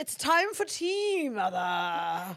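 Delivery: put-on booming, loud, swooping upper-crust British accent. Asked whether the dog speaks with an accent, the speaker gives his upper-crust Welsh corgi voice. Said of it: "a Welsh upper crust corgi".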